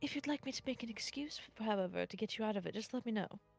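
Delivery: whispered aside. A game master voices a character speaking privately to a player, whispering. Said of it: "he whispers to you in Sylvan".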